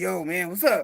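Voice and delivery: put-on bass voice, very low and soft. Retelling greeting people while passing as a guy, putting bass in voice. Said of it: "I had to put some bass in my voice".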